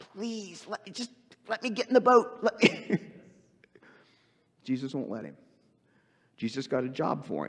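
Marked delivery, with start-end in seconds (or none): 0.0-2.5 mock pleading, much higher pitch. Retelling how the healed man begged Jesus, acting out begging. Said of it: "Begs him".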